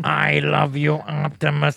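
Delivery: put-on robot voice. Showing how the Transformer in the movie sounded: Bumblebee voice. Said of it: "he sounded like this".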